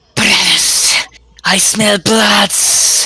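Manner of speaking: slow, drawn-out yell. Playing a character who yells through the catacombs: yelling in character.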